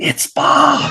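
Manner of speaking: hushed mutter, murmured under the breath. Retelling how kids reacted when a character appeared: imitating kids muttering under their breath. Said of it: "they all went under their breath".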